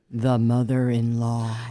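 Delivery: eerie, ominous, spooky voice. Repeating a listener-suggested topic in a spooky voice. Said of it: "In a spooky voice".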